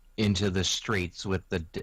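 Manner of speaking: ordinary talk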